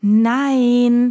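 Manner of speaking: stretched-out word. Reading a woman's one-word answer after she thinks a moment, drawn-out. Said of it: "sagte sie gedehnt".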